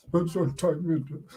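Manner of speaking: slow, drawn-out, odd changed voice. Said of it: "What that voice".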